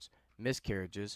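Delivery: ordinary delivery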